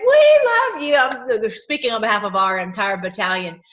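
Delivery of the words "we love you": imitated screaming, higher and louder. Retelling what was screamed at him at a rally: retelling own scream. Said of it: "I'm screaming at him and saying".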